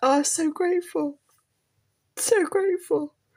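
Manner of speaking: high, tearful crying through the words. Recalling giving a present, the speaker breaks down: crying. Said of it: "I need the tissues".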